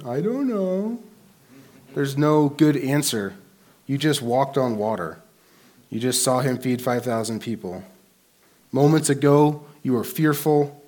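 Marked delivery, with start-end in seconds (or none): 0.1-1.0 put-on very high little kid voice. A speaker imagines their little kid answering the question, in a little kid voice. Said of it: "I hear the voice of my little kid".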